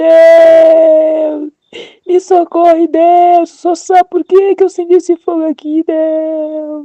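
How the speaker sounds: loud, slow, stretched-out shouting. Retelling crying out to god while someone pulls at her: retelling own shout. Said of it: "eu peguei e gritei".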